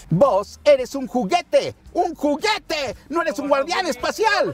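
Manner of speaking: very high, squeezed cartoon cowboy voice. Quizzing the audience on whether they recognize the voice, in a Woody voice. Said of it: "A ver si reconocen tu voz de Woody".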